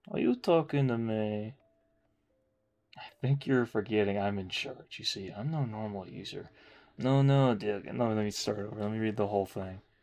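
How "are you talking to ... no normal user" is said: smarmy, put-on fop character voice. Reading a script aloud, in a put-on 'Hello, princess' guy voice. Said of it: "When I do that voice".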